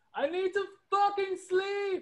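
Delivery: put-on very high, strained, drawn-out screaming yell. Retelling what a woman screamed out the window during fireworks: imitating a woman screaming. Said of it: "woman that screamed out the window".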